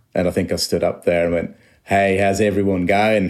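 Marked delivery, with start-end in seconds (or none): 1.9-3.4 put-on strong Australian accent, laid-back manner. Interviewee retells greeting the crowd at a london gig, in a particularly australian accent. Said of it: "in a particularly Australian accent".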